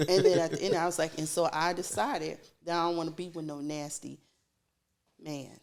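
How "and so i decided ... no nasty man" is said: ordinary talk, nothing marked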